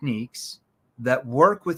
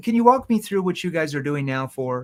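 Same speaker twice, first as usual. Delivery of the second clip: genuinely interested, curious, inquisitive tone; 3 semitones higher than usual. Showing a sales question asked in a curious tone: curious tone. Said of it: "That's a curious tone".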